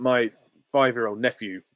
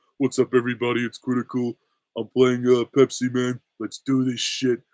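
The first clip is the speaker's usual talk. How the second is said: stoned-sounding, totally unbothered, couldn't-care-less. Imitating a YouTuber intro, sounding like a more stoned Patrick: Critical impression. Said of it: "He almost sounds like a ... stoned version of Patrick from SpongeBob".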